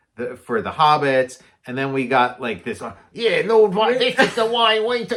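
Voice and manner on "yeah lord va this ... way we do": high, loud Cockney orc voice. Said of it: "like, an East End of London accent".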